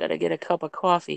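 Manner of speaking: Boston accent, hushed, barely above a whisper. Comparing how people say coffee, the speaker demonstrates a Boston accent. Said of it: "In Boston, it's like".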